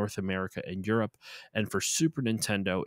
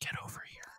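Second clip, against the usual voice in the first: soft, breathy ASMR whisper, murmured; 12 dB quieter than usual. Imagining a Mortal Kombat ASMR version of the line: ASMR whisper. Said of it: "Mortal Kombat A S M R?".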